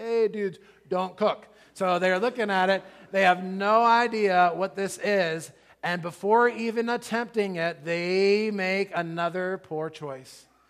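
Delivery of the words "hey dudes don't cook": higher, louder surfer-dude voice.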